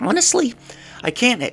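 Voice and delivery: voice cracking and breaking very high. Discussing a coach's three-point offense on a podcast, voice cracking. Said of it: "that was a voice crack right there".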